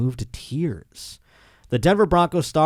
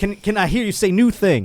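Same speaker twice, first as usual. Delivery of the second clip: high, lifting pulpit preacher cadence; 6 semitones higher, 3 dB louder than usual. Retelling a clip, imitating Russell Wilson preaching. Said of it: "I'm trying to do it like him".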